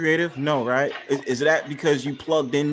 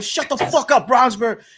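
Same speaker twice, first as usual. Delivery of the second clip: woman's loud, shrill, angry yell; 9 semitones higher, 5 dB louder than usual. Recounting a woman on a panel yelling at the speaker: imitating a woman yelling. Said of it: "a woman would sit up there and start yelling".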